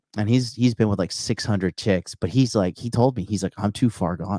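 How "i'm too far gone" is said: put-on traumatized war veteran voice. Retelling what a womanizer friend told him, imitating a traumatized war vet. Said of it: "talking like a fucking traumatized, like, war vet".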